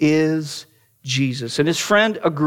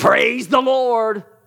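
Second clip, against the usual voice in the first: teasing, jesting, mocking tone, pitched up; 6 semitones higher than usual. Retelling how a friend greeted someone: imitating a mocking voice. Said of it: "in a mocking voice say".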